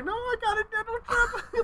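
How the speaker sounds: voice climbing up and up, very high, drawn-out. Retelling trying to stop dad looking: imitating a voice rising higher. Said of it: "My voice keeps going higher and higher".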